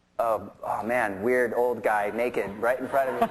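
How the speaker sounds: ordinary talk, nothing marked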